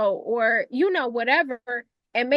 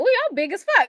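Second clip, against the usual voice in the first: high voice, spoken with a little evil laugh; 7 semitones higher than usual. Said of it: "saying it in that little, like, evil laugh that she do".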